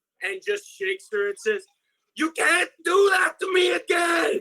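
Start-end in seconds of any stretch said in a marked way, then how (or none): 2.2-4.4 acted, shrill, very high, slow, frantic, desperate scream. Playing a character who shakes a fallen ally: screaming in character. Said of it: "he's still screaming".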